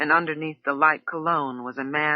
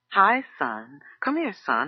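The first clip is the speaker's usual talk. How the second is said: put-on grandmotherly way of speaking, slower. Character testing out a name for someone, sounding like a grandmother. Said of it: "I sound like a grandmother".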